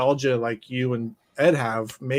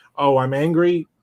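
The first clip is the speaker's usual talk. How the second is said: mock flat delivery at a slower pace; 4 dB louder than usual. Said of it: "He was very monotone".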